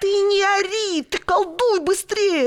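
very high, sharp barked delivery. Svetka answers the screaming blue man, barking. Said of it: "Рявкнула [name]".

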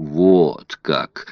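drawn-out, mocking. Narrator reads a man answering a police inspector, mocking drawl. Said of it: "протянул Паспарту, насмешливо глядя на него".

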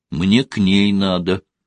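ordinary delivery

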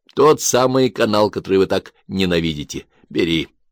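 plain

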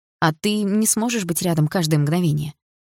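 plain

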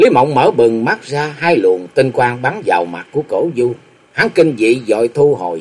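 plain

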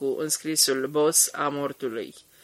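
plain

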